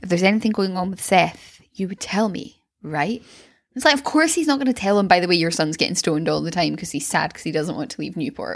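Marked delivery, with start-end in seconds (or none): 0.0-3.2 mock foreboding, weighty, very ominous, loaded delivery. Retelling a scene where a father asks a young man about his son: mock-ominous retelling. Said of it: "Sandy very ominously is like".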